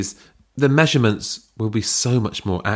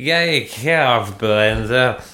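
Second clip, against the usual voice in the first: put-on slurred, enthusiastic, tipsy drunk cheering. Chatting with others about Bella, the speaker mimics her, imitating Bella's drunk slurring. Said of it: "she's slurring her words like".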